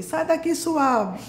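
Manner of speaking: angry yelling, high and loud.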